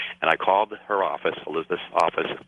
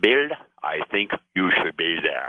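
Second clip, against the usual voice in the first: put-on woman's German-accented speech. Quoting Elizabeth telling him he should attend, in her German accent. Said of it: "she said in her German accent".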